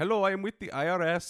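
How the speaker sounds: put-on Filipino accent. Describing IRS scam phone calls, the speaker imitates the caller in a scam caller's accent. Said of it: "I'm not trying to be rude by doing the accent".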